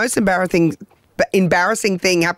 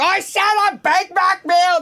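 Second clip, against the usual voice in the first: exasperated, deliberate, very high, slow frustrated shout; 13 semitones higher than usual. Retelling a mate ordering at a drive-through speaker, retelling a frustrated yell. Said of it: "there's no need to yell".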